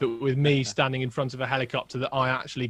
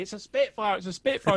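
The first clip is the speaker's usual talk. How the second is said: put-on thrilled, high, excited shout; 8 semitones higher than usual. Speaker recalls hanging out the window, shouting to Lizzie: retelling own shouting. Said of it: "I'm shouting at Lizzie".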